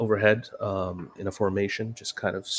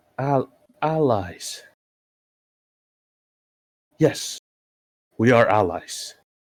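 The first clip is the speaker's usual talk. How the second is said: grudging, reluctant, very slow and halting; 3 dB louder than usual. Voicing a character who is uncomfortable calling them allies: uncomfortable, reluctant. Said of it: "it kind of makes him uncomfortable to say it".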